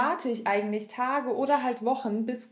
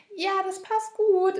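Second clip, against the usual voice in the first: slow, pitched-up, put-on agreeable, insincere tone; 8 semitones higher, 3 dB louder than usual. Showing her lying voice when confirming an appointment, fake and agreeable. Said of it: "Und das ist so eine richtige Lügenstimme von mir. Dann auch so".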